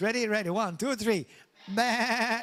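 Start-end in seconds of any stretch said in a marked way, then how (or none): 1.7-2.4 bleating sheep voice. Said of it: "do the sheep voice".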